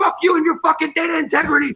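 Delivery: high, heated, acted screaming. Retelling a shouting match in a work meeting, retelling own screaming. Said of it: "And we're screaming back".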